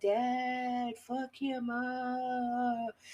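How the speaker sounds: very slow ghostly voice, stretched upward. Imagining the daughter's voice in her father's head, Sarah's ghostly voice. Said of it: "do you hear Sarah's like ghostly voice in your head".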